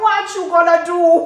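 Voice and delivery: bad Indian accent. Retelling what a woman at the bank said to her, in a bad Indian accent. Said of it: "She had the cutest little Indian accent".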